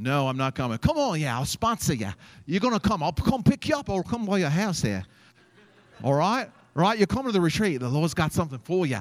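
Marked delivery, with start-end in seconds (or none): 0.8-9.0 put-on insistent, pushy, pitched-up Australian accent. Describing a recruiter from Australia who pushed him to a retreat: pushy Australian accent impression. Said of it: "this guy was from Australia, and he was like a bulldog. He'd be like".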